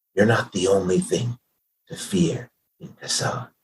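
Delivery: low, breathy, near-whispered stage whisper. Recounting what a character said while drawing you closer: low stage whisper. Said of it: "like stage whispering almost".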